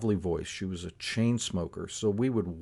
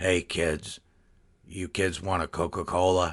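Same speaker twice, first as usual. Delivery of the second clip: slow, put-on gravelly chain smoker's voice; 3 semitones lower than usual. Retelling an old lady's greeting: imitating a gravelly-voiced chain smoker. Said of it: "I'll sort of imitate her voice".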